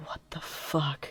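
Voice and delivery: hushed, breathy, barely voiced whisper. Retelling a moment behind a mask while someone pays, retelling a whisper. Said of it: "just like whispering".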